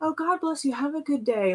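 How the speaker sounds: put-on sympathy, pitying. Retelling how a server blessed the speaker: imitating a pitying goodbye. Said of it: "this is probably the only thing she's gonna eat all day".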